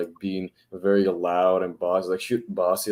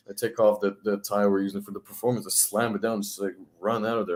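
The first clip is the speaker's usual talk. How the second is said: ordinary delivery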